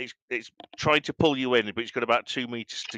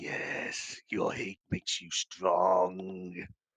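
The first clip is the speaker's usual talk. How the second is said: put-on whispering voice, lower and quieter; 5 semitones lower, 6 dB quieter than usual. Voicing a whisper in a player character's mind: whispering Emperor voice. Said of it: "the whisper in your".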